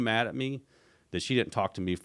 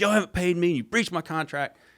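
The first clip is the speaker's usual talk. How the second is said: mock yelling, much higher and faster; 10 semitones higher, 6 dB louder than usual. Retelling a tense meeting, the speaker quotes Junior: imitating Junior yelling. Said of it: "he starts yelling at her".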